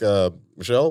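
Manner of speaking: hesitant, uncertain delivery opening with an uh. Answering how the caller would sound on the phone: Barack Obama impression. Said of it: "what would it sound like if Barack Obama was calling me".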